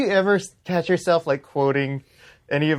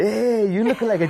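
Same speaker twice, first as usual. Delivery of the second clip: put-on drunk man voice, higher pitched; 8 semitones higher than usual. Retelling how they used to impersonate a drunk guy at a bar: imitating a drunk guy. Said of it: "we would always impersonate the guy".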